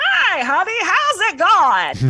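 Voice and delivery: put-on very high, very loud, swooping old grandma voice. Show how your grandma from Buffalo sounds, imitating a 96-year-old Buffalo grandma. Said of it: "She sounds like this".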